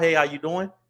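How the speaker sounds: easygoing, relaxed, friendly and welcoming tone. Showing how to greet people in business: relaxed smiling greeting. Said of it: "You gotta smile".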